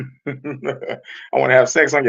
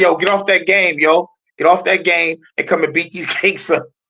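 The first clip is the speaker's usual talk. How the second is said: put-on woman's New York accent; 4 semitones higher than usual. Imagining a New York woman telling him to quit his game, New York woman's accent. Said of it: "hearing the female accent from New York".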